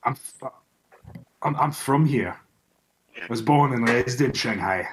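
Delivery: thick, heavy Scottish brogue. Asked why he is so far from home, a character answers in a heavy Scottish accent. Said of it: "this man is speaking in a heavy Scottish accent".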